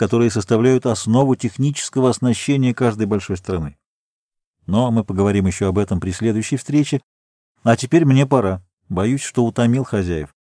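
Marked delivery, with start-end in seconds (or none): none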